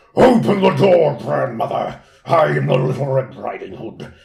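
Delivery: very loud, rasping, wicked, evil wolf voice. Reading aloud the wolf's line at grandmother's door, evil wolf voice. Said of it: "It's sort of a different voice from the other wolf, but still evil".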